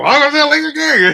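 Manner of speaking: very high, very loud, shrill, booming and excited. A host mimics how a co-host opened the show, imitating a loud excited intro. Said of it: "You were loud, excited at the same time".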